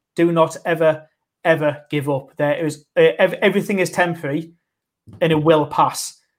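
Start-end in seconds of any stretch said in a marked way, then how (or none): none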